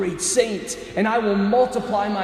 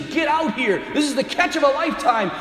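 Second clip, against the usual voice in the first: shrill, screaming yell; 5 semitones higher than usual. Retelling Peter's reaction to the huge catch: imitating Peter screaming. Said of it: "he screams".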